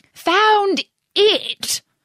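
rather cross, very high-pitched voice. Narrator reading the mouse's answer to the duck's question, cross. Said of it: "rather crossly".

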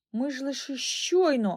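stumbling, faltering, halting, breaking off. A girl answers a boy's question after both shake their heads, confused: faltering. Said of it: "[name] затнулася".

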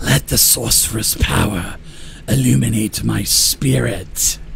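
rough, hissing shadowy figure voice. Game master voices a shadowy figure speaking to the players, hissing. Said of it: "this shadowy figure is hissing".

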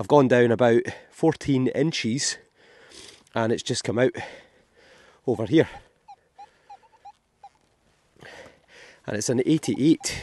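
out of breath, breathless. Recording while digging down into a hole: out of breath. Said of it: "I'm also out of breath".

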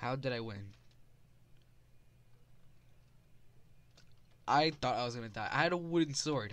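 shaking, trembling, jittery with excitement. Streamer who just unexpectedly won in a game, shaking with excitement. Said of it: "I'm legit shaking right now".

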